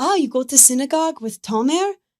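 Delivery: put-on, high-pitched, badly done Israeli accent. Retelling what his mom asked you when you met her, in a horrible Israeli accent. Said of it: "This is my horrible Israeli accent".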